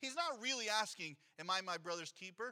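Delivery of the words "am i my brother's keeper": ordinary delivery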